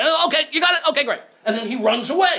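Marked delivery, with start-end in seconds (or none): 0.3-1.2 put-on high, chirpy, quick, cheerful Australian accent. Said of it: "So he said".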